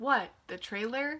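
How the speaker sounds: ordinary talk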